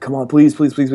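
put-on childish begging, pleading over and over. Retelling begging a parent for a videotape: retelling own begging. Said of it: "I begged my mother".

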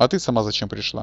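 ordinary delivery

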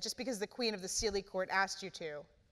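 ordinary delivery

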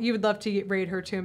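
usual speaking voice

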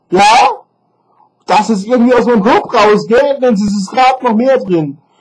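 furious, fed-up venting. Talking to viewers in his own video after one of them accused him, furious. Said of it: "Und ich bin stinksauer".

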